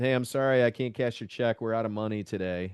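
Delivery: sarcastic, falsely apologetic tone. Recalling what they told bank customers from behind tinted windows: retelling sarcastic remarks. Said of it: "I really enjoyed being very sarcastic".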